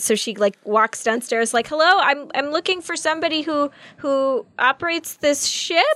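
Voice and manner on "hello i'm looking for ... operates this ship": panicked voice, much higher pitch. Voicing her character calling out while walking downstairs, panicking. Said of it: "clearly panicking".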